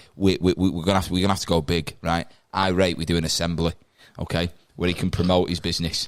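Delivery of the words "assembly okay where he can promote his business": ordinary talk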